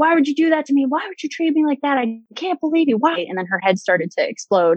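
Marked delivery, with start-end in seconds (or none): 0.0-3.2 mock enraged angry screaming, pitched high. Retelling a dream, screaming at her for being so mean to you, retelling a scream. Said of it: "So I was screaming at her".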